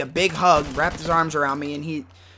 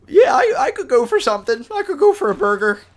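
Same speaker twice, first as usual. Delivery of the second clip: put-on very high, tear-choked cracking voice; 11 semitones higher, 7 dB louder than usual. Retelling what they said to their parents after crying, retelling in a crackly crying voice. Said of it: "in that real crackly voice".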